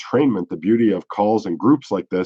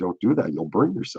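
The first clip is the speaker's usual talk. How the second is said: soft, gentle, tender, loving tone; 8 dB quieter than usual. Retelling a warning not to touch the stove, imitating a soft, loving voice. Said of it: "the voice is soft and loving".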